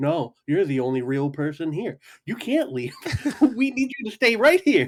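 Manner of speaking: high, spaced-out, whacked-out stoned rambling. Retelling pleading with the only sober person to stay: imitating being high. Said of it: "we were all whacked out of our mind going".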